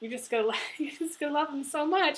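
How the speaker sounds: tearful, breaking voice. Giving a message to Virgo, the speaker keeps talking while crying. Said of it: "I don't know why I'm crying so much".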